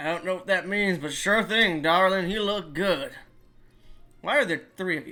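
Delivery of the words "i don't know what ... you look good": put-on cowboy voice. Voicing a character who answers a player: Arthur Morgan voice. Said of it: "Why did he turn into Arthur Morgan?".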